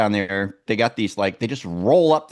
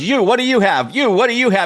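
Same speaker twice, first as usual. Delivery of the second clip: impatient, raised voice; 10 semitones higher, 4 dB louder than usual. Telling a story about ordering food under pressure; imitating the impatient man behind the counter. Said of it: "You guys have no patience".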